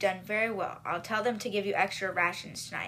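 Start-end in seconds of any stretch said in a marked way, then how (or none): none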